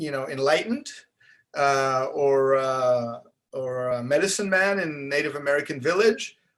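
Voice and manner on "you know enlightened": normal talking voice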